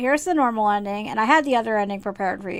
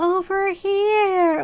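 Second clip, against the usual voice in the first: put-on high small-child voice, here drawn out; 10 semitones higher, 3 dB louder than usual. Speaker complaining the kid's voice changed, quoting the kid in a high-pitched little kid voice. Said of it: "she had this really high pitched voice".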